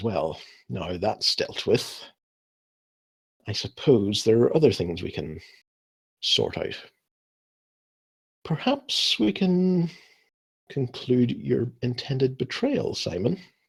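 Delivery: contemptuous, sneering villain voice, swooping pitch. Voicing a vampire addressing Simon: sneering voice. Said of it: "he has just this sneer in his voice".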